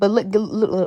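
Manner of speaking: stuttering, stammering speech. Showing off freshly sleeked hair to the viewers: stuttering. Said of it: "I'm stuttering".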